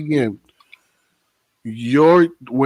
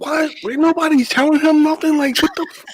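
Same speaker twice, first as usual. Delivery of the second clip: much higher-pitched, baffled, outraged reaction. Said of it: "I'm like".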